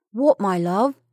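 fearful. A man answers the frantic woman clinging to him in his arms, afraid. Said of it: "becoming also afraid".

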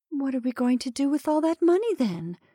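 quavering, unsteady. A wife questions her husband about the money, in trembling tones. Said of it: "in trembling tones".

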